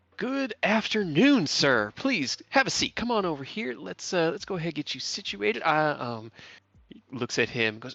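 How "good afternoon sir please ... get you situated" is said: strained, forced polite tone, very high pitch. Game master voices an exhausted woman greeting a man, putting on a polite mask. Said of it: "puts on this like mask and comes out".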